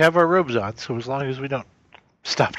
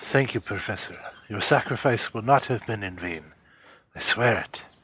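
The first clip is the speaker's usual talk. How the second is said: soft whisper, lower; 4 semitones lower than usual. Acting out kneeling beside the professor with a hand on his head, whispering. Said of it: "kind of whisper".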